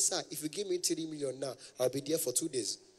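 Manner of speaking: ordinary talk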